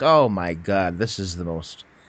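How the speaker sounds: put-on exasperated, fed-up genie voice. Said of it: "so bored".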